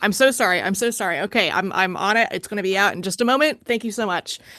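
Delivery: flustered, frantic, hurried, rattled-off words. Voicing a character rushing an order for a waiting customer: frantic apologetic character voice. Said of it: "Miles frantically".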